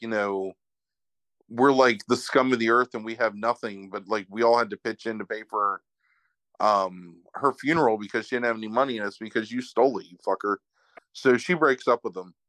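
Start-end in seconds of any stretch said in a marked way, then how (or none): none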